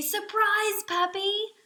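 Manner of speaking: thrilled, excited voice, very high-pitched. Reading a story title aloud to listeners, showing the excited voice. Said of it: "That means we say it in our excited voice".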